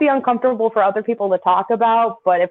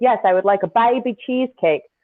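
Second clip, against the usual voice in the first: mocking put-on Australian accent. Retelling replying to an Australian waitress in New York, mocking her Australian accent. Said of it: "Like I was making fun of her".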